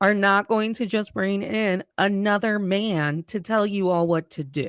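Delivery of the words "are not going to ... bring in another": ordinary delivery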